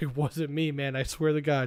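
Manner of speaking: ordinary talk, nothing marked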